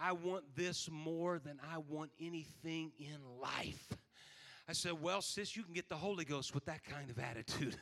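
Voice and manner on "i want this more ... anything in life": acted deeply earnest, solemn, very serious tone. Retelling what a woman on the front row told the speaker: retelling her very serious tone. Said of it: "She said in a very serious tone".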